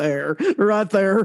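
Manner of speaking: put-on easygoing, laid-on Texas accent. Imitating the salesperson from the ad: Matthew McConaughey Texas accent. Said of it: "That was a very Matthew McConaughey, like, Texas accent".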